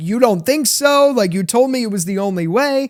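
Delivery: put-on angry outburst. Retelling a show scene where a character gets really mad: imitating someone getting really mad. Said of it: "Tabitha gets really mad".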